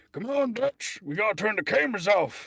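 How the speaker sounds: very loud, very high-pitched, belted character voice. Urging Dutch to turn the cameras off: Arthur Morgan voice. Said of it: "That's the voice I'm gonna stick with".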